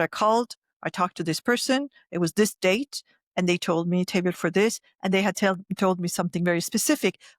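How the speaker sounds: plain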